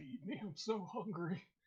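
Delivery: put-on high, hungry, starving horse voice. After asking the horse about the performance, answering as the horse. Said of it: "And the horse just like".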